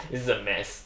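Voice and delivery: soft, low laughter running through the words. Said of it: "I'm laughing".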